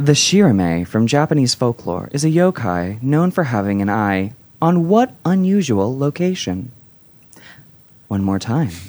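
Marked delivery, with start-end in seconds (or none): 0.0-6.7 soothing late-night radio voice. Reading a trivia question to the players, the host uses a Delilah voice. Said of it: "do my Delilah voice".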